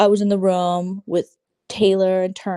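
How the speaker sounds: normal talking voice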